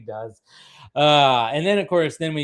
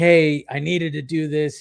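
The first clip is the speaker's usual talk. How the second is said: put-on pleading, higher; 2 semitones higher than usual. Recapping a show, retelling Jim pleading his case, mock-pleading Jim. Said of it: "Jim that is like pleading like".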